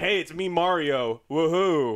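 very slow character voice, every word stretched out. Mocking the actor voicing the main character, doing his Mario line: imitating the actor's Mario voice. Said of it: "And he's like".

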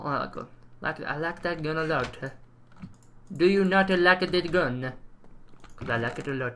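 put-on Italian accent. Putting everything away before ending the episode, in a put-on italian accent. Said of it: "I don't know why I'm doing that accent. I was about to say Italian".

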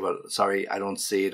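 ordinary delivery

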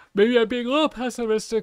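talking through a yawn. Talking about the market after getting home late, yawning while talking. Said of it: "Excuse me, I'm yawning".

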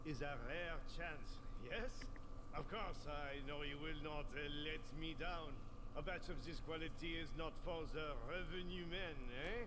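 put-on cartoon-style French chef accent. Game character handing over an important delivery batch; French cook accent. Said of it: "He sounds like the French cook from The Little Mermaid".

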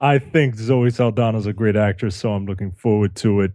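ordinary talk, nothing marked

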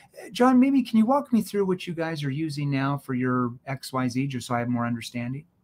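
genuinely interested, curious, inquisitive tone. Showing salespeople how to ask a client a question in a curious tone. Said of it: "It's a curious tone".

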